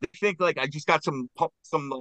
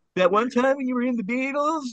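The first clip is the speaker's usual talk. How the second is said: very high-pitched, pestering tone; 11 semitones higher than usual. Retelling a Saturday Night Live skit: imitating Chris Farley. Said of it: "where he's like".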